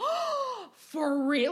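eager cartoon-dog voice. Retelling a man's reaction to being offered an elf hat, imitating an intense man. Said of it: "this man was intense".

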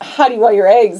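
normal talking voice

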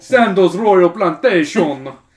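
very loud, weird, odd put-on Jamaican accent. Acting out a man whose accent the listener can't understand, weird jamaican accent. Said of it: "That's a weird Jamaican accent".

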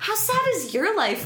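high, wide, mocking, incredulous voice.

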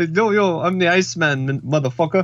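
put-on Arabic-sounding accent. Asked for a Minnesota accent, try again; it comes out an Arabic-sounding accent. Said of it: "that was more Arabic".

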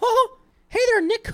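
very high, loud, squeaky cartoon voice. Greeting Nick and introducing the podcast as South Park Mickey Mouse voice. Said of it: "It's like Mickey Mouse from South Park".

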